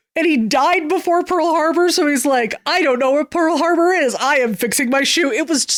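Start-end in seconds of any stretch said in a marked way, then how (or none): 2.7-5.3 put-on Italian accent. Retelling a bit about an Italian cobbler who died before Pearl Harbor, Clayface's Italian accent. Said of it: "get an Italian accent in the Clayface voice".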